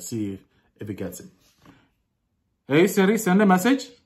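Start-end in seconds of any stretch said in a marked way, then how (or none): 2.7-3.9 deliberate, put-on, pitched-up Pakistani accent. Testing a voice assistant, the speaker gives the command in a Pakistani accent. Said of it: "now we're gonna do a Pakistani accent".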